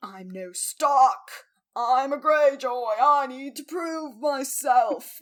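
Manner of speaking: strained, constipated-sounding, loud and very slow. Recapping a show's story, voicing Theon in a constipated-sounding voice. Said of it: "Why do I sound constipated?".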